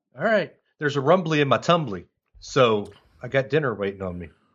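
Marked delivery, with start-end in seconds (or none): none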